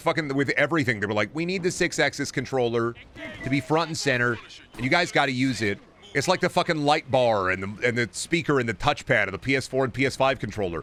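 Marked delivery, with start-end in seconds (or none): none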